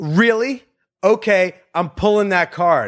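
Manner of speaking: mock bold announcing voice. Retelling how a girl came up to the group, imitating someone talking loudly. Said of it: "just very loudly goes".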